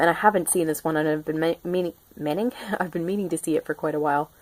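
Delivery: hurried, rushed, stumbling over words. A fan saying they've long meant to see this film: talking fast, stumbling over words. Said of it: "I'm talking so fast that I'm like stumbling over my words".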